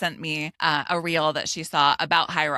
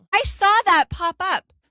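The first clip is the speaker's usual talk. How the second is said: shrill, very high, thrilled excited yell; 6 dB louder than usual. Telling the other speaker about her run this morning, with an excited yell. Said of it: "Sorry to yell".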